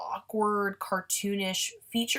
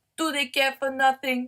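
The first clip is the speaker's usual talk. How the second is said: worst-ever put-on German accent, pitched up; 5 semitones higher, 4 dB louder than usual. Describing a group of nihilists, asking a question in a bad German accent. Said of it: "That was the that was the worst German impression ever".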